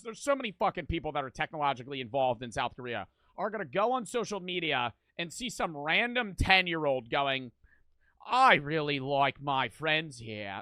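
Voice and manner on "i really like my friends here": put-on slow, loud Australian accent. Imitating a random ten-year-old on social media, in an Australian accent. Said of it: "That was Australian accent".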